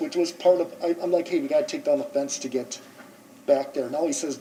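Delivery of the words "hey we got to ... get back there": normal talking voice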